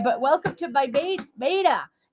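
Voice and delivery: accent from Maine. Greeting her audience of Mainers, doing a Maine accent. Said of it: "I can do the accent now".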